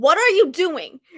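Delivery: put-on half-voiced shout, mild, only hinted. Retelling how they yelled at a book while reading: imitating own past yelling.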